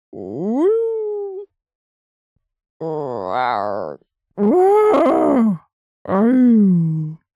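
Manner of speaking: loud, very slow, eerie spooky calls. Asking a listener if it would scare them, making random cave sounds. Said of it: "Those are random cave sounds. Would you get scared by that?".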